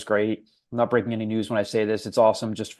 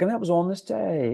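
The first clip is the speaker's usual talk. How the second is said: put-on British accent; 9 semitones higher than usual. Imitating how the other speaker once said a line: imitating a british accent. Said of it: "it sounded British".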